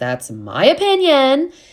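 put-on voice, pitched way up, loud and swooping. Giving an opinion on how everyone looked, in a Tamra Judge voice. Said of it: "in a Tamra judge voice".

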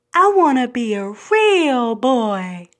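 put-on cartoon voice, slow and drawn out. As a kid, after grandmom's warning about lying, Pinocchio voice. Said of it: "in my Pinocchio voice".

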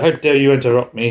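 ordinary delivery

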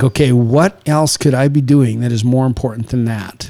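plain

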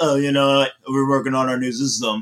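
casual, relaxed executive voice. Quoting an executive's announcement about a new system: Phil Spencer impression. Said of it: "amazing Phil Spencer impression".

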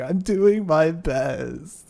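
very slow, drawn-out, high fake crying. Retelling a film scene where a character fake cries: imitating fake crying. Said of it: "Her fake crying was pretty good".

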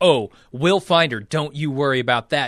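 put-on threatening tone. Retelling what Mike says to the father at the door: imitating Mike's threatening tone. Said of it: "Clearly in a threatening, like, "We might beat the shit out of her" kind of tone".

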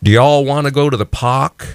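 put-on Texas accent. Retelling a childhood remark after arriving from Texas, in a Texas accent. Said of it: "so screwed up in my accent, having come directly from Texas".

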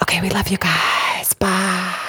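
whispered voice. Saying goodbye to listeners at the end of an episode: whispering. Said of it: "Let's keep whispering".

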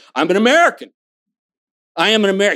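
put-on Indian-accented English. Quoting how Anu answers when asked what he is, in Anu's Indian accent. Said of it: "Anu will say to you in his Indian accent".

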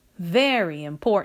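usual speaking voice

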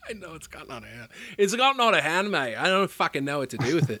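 put-on Australian accent. After being teased about the impression, replying in a Hugh Jackman impression. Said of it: "your Hugh Jackman impression".

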